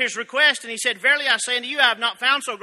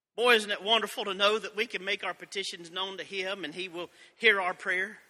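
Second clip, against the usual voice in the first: ordinary talk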